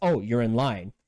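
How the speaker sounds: plain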